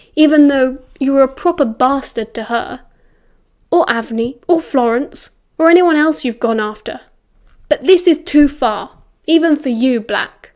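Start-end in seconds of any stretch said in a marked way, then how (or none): none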